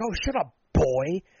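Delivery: loud yelling. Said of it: "a racist relative yell at the T V".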